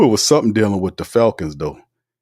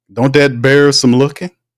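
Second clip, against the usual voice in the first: ordinary talk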